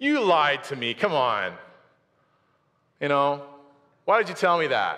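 put-on annoyed, complaining tone. Retelling the Samson story, voicing the woman after he breaks free, imitating an annoyed complaint. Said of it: "And she's like annoyed".

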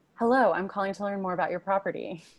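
plain, neutral standard American accent. Demonstrating voices tested in a study's apartment calls, standard accent voice.

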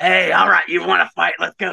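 put-on broad Australian accent. Describing a director coaching Conor McGregor, sounding like the Crocodile Hunter. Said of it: "I sound like fucking Crocodile Hunter right now".

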